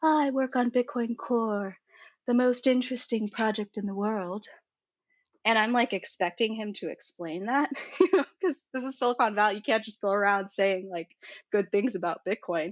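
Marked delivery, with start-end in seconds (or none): 0.0-4.5 put-on British accent. Recalling first meeting John Newberry: imitating John Newberry's soft British voice. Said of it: "he says in his very soft British voice".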